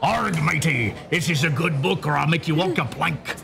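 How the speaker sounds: swashbuckling storybook pirate voice, arr matey style. Asked by the host for a pirate impersonation, a guest speaks in pirate voice. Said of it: "Go ahead and do your pirate impersonation".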